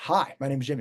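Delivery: strong, firm voice. Explaining leadership class lessons, demonstrating an introduction in a strong voice. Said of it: "So strong voice is".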